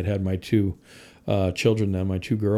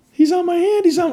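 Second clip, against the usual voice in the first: very high, very loud, shrieking scream; 8 dB louder than usual. Retelling how a woman screamed when a man stood on her hand: imitating someone screaming. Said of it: "she starts screaming".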